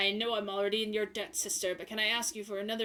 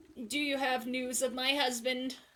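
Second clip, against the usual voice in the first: put-on slow, unhurried elderly woman's voice; 4 semitones higher than usual. Reading a game character's lines aloud: old lady voice. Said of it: "also an old lady voice".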